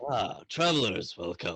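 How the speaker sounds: put-on ancient, ghostly old sailor voice. Voicing a ghost greeting travelers at a bridge: old sailor ghost voice. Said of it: "He goes".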